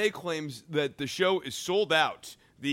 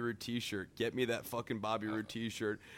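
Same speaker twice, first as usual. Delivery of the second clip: ordinary talk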